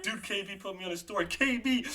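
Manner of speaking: put-on, high, drawn-out, overjoyed ecstatic screaming. Retelling the moment back in the car with a friend: retelling a scream. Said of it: "just screaming".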